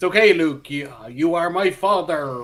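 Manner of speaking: put-on Bristol accent. Explaining what an actor expected before being overdubbed, the speaker uses a Bristol accent. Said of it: "let him have his Bristol accent".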